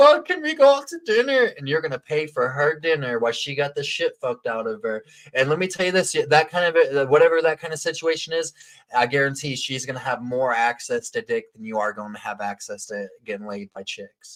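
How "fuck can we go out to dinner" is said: mock crying, higher and louder. Acting out a woman calling after a bad night: imitating someone crying. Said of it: "She's gonna call you crying".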